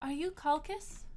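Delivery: flighty, high, fluttery voice. The narrator voices a floating being that speaks to Calcus, in a flighty voice. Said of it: "this sort of flighty uh, voice".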